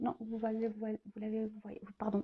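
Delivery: soft, stumbling stammer.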